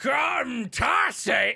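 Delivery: large booming voice. Game master voicing someone calling out from the background, large booming voice. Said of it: "a large, like, booming uh, voice".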